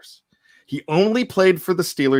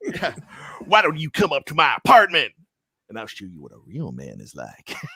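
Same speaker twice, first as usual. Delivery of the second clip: smooth, suave, over-the-top, laid on thick. Quoting a favorite line from Rocky III: Mister T as Clubber Lang voice. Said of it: "He's like".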